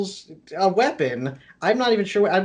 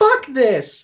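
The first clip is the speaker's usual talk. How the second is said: put-on yell, tossed out high and sudden; 5 semitones higher than usual. Retelling what she yelled before bolting for her car: imitating someone yelling. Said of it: "I hear her just yell out".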